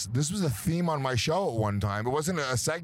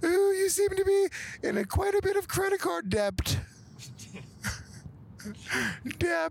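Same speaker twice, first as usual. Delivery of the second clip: put-on very high old-nanny falsetto voice. Trying out the voice Williams settled on: Mrs. Doubtfire falsetto. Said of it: "try to speak in a falsetto".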